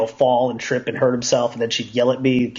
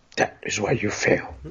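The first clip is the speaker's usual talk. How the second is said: slow, deliberate, breathy whispered sage voice, drawn out; 3 semitones lower, 4 dB quieter than usual. Asking whether someone said the line in a Yoda voice. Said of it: "with a Yoda voice".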